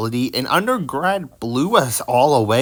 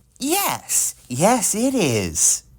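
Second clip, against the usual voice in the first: high, slow, swooping sing-song cartoon voice; 7 semitones higher than usual. The speaker tries a voice and asks if it was good or bad: Phineas impression. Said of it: "good or bad Phineas impression".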